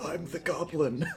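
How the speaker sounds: put-on whisper. Riffing on a film scene, voicing the butler's line: imitating a butler whispering. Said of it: "whisper in his ear".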